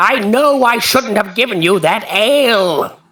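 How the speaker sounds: squawky, high parrot voice, ale stretched out. Game master voices Rorik shouting down from a crow's nest, parrot-like. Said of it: "Why do I sound like a parrot version of Rorik?".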